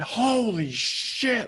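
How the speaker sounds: high, sudden, scream-like burst. Telling a listener how they startled someone at home, retelling a scream. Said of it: "Like I screamed it".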